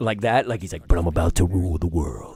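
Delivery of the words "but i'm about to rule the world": low, big, full creature voice. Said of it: "his voice got so like creature sounding".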